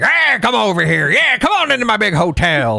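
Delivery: put-on old Southern tycoon voice. Retelling a theme park hotel host's greeting: old Southern business tycoon voice. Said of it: "old Southern, like, business tycoon guy".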